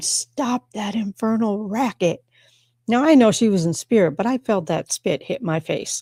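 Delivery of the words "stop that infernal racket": mock angry scolding outburst, screamed up close. Retelling how a doctor's spirit screamed in their face: imitating Linda Hazard screaming. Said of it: "and just screamed".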